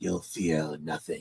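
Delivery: very low, sinister put-on villain voice. Voicing a captor telling Duke his fate: villain impression. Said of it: "I'm actually doing a really good impression".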